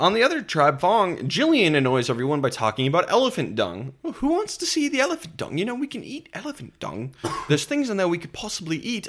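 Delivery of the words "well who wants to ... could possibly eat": very high, swooping, terrible put-on British accent. Quoting Jillian, who annoys everyone on the tribe, in a bad British accent. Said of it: "I'm trying to do a British accent".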